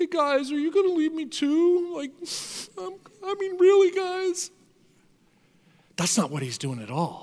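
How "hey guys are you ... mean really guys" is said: pitiful, pathetic pleading tone, pitched way up. Picturing the twelve being asked if they'll leave: imitating a pathetic pleading Jesus. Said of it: "kind of pathetically looks at them and goes".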